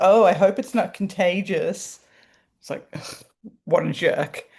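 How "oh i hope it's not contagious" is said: put-on teasing, light, jokey aside. Retelling what a man at an event said to the speaker, imitating his joking voice. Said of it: "says in a joking voice".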